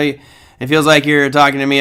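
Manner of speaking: ordinary talk, nothing marked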